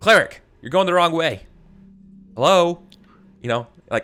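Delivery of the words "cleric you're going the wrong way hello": calling out, higher pitch and louder. Voicing a character calling out to a cleric going the wrong way: NPC calling out to someone. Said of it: "he's going to call out to you".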